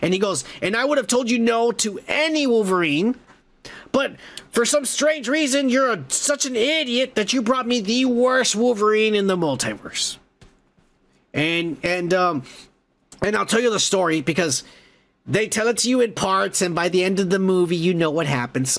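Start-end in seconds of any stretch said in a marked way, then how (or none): 0.6-10.2 acted-out furious, insulting, pitched-up rant. Retelling a movie scene where the character goes crazy: imitating furious Mister Paradox. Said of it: "and he's super pissed".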